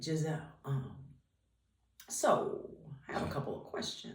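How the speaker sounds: slow, drawn-out, breathy, half-whispered talk. Retelling a phone call from dad: imitating dad talking slowly. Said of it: "he talks real slow".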